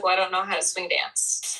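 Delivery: plain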